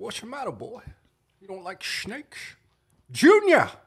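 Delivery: very high, swooping voice leaning hard on words. Showing someone who has never seen the film how he talks, do a movie character impression. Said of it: "He talks like this".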